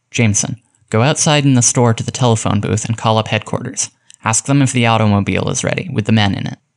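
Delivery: ordinary delivery, nothing marked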